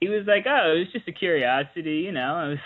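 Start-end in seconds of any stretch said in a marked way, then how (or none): 0.5-2.0 breezy, unbothered, nonchalant offhand tone. Retelling what an actor said about the building: imitating a nonchalant tone. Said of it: "he just said it so nonchalantly".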